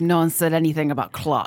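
put-on Russian-accented English. Speaker quotes a Russian man's reply, in a Russian accent. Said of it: "This is my Russian accent".

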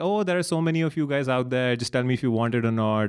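mocking, put-on, super condescending tone. Retelling how a man talks to people: mocking a condescending tone. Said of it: "he's super condescending".

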